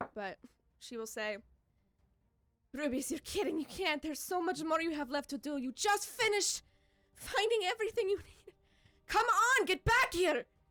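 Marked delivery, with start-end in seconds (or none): 2.8-10.4 frantic, alarmed, panicked tone of voice. Calling a lost soul back to its body during a ritual: panicked voice. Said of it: "in a panicked sounding voice".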